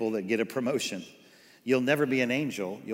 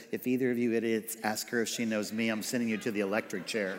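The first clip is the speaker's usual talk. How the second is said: normal talking voice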